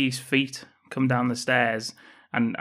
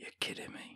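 very soft, quiet whisper. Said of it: "he whispers".

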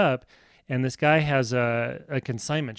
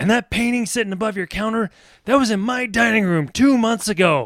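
loud, high-pitched, mobster-style tough talk; 9 semitones higher, 6 dB louder than usual. Retelling confronting a shop clerk about money owed: imitating Mister T. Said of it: "kinda sounding like Mister T there".

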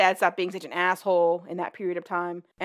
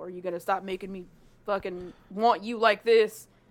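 sudden put-on country accent. Speaker retelling what he says to her, in a put-on country accent. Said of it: "Why does he all of a sudden have a country accent?".

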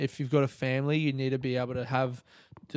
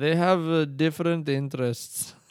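thick, heavily laid-on put-on Indian accent; 2 semitones higher, 3 dB louder than usual. Retelling an interviewee's answer about his family: imitating a thick indian accent. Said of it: "he goes in this thick Indian accent".

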